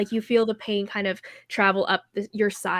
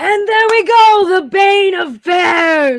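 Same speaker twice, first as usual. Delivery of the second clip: very high, very loud, booming, drawn-out shout; 9 semitones higher, 12 dB louder than usual. Voicing a dwarf announcing the winner of a fight: shouting announcement. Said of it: "And he kinda shouts it out".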